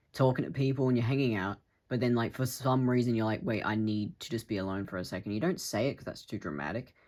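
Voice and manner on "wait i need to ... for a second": ordinary talk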